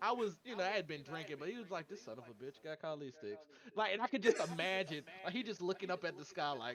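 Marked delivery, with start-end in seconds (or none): 1.9-3.5 soft, dead-calm, calmest possible voice. Retelling what another player said in a game: imitating a very calm voice. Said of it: "with the calmest voice".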